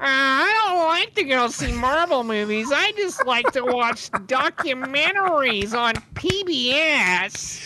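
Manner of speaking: dweeby, nerdy put-on voice. Acting out your own reply to a Marvel movie invitation, in a nerd voice. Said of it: "your nerd voice is on point".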